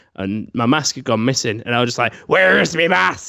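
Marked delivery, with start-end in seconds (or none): 2.3-3.3 put-on rough, creaky, very drunk voice, loud and drawn-out. Retelling searching for a missing mask at home: imitating own drunk voice. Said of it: "going round saying it like that".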